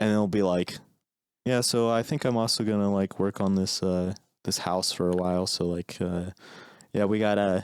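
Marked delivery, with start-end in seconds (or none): 1.6-7.6 put-on low-key, gentle, even, soothing monotone. Portraying how soothing a man's voice is, imitating a soothing voice. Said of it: "I'm trying to like portray how soothing his voice is".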